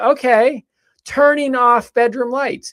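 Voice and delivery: put-on female Australian accent. Imitating the smart speaker answering the lights command: Google's yelled female Australian accent. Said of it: "a female Australian accent".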